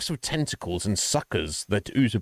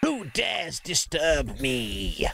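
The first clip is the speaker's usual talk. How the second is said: high, hissing, very drawn-out and slow; 5 semitones higher than usual. The game master voices a figure disturbed on his throne: hissing voice. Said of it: "He hisses".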